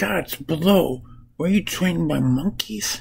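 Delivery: exasperated delivery.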